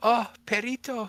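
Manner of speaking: put-on tiny, very high, loud two-year-old toddler voice. Retelling what a daughter says on seeing a dog: imitating two-year-old daughter. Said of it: "she's like".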